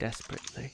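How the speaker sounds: monotone voice. Answering a character's taunt while in character: monotone voice. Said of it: "the monotone voice that comes out from underneath the mask".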